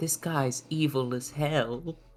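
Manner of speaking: hushed, secretive half-whispered aside. A player's character turns to a companion and speaks to them: half-whispering. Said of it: "just sort of like whispers".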